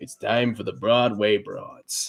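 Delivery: sleazy greasy mobster voice. Showing off a favorite voice to do: sleazy, greasy mobster voice. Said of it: "Is like sleazy, greasy Italian or sleazy, greasy mobster".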